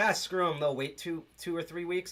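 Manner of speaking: ordinary delivery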